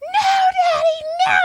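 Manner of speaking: shrill, very high screaming. Retelling a friend's phone call with a dad, imitating someone screaming. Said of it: "And she's screaming".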